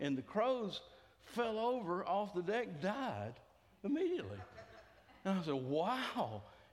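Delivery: ordinary talk, nothing marked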